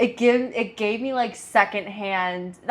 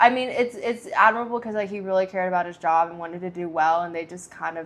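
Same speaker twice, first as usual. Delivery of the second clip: plain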